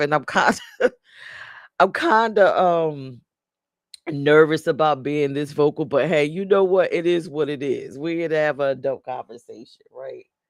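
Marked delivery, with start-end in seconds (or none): 0.0-5.9 words spoken through stifled, held-back laughter. Admitting nervousness about discussing an adult topic: laughing while talking. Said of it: "I'm trying not to laugh".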